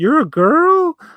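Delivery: put-on high-pitched, slow, surprised kid voice. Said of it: "he was like".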